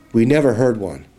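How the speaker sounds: ordinary delivery, nothing marked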